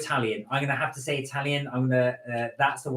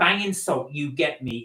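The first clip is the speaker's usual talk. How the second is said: ordinary talk, nothing marked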